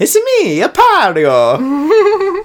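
very high, swooping, swinging cartoon voice. Speaker jokes about the Pario brothers, doing a Mario voice. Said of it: "to do a Mario voice".

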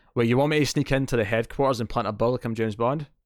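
ordinary talk

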